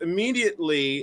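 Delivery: ordinary delivery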